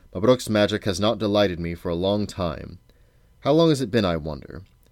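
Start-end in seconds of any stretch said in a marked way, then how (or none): none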